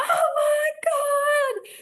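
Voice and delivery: very high, loud excited shriek, "God" drawn out. Retelling the audience's reaction to an onstage marriage proposal, retelling a screaming crowd. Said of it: "And everyone is screaming".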